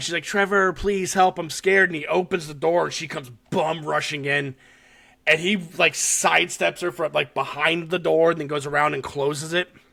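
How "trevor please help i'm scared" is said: put-on tearful, pleading tone. Retelling a scene where a crying woman begs for help: imitating a crying plea. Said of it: "she's crying".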